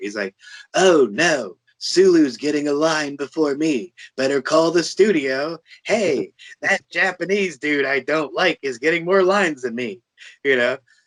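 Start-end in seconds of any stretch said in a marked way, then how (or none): 0.7-10.0 hammy, overacted sixties-TV style delivery. Showing an impression of Shatner complaining about lines: Shatner impression. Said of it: "here's my impression of, of, uh, of Shatner".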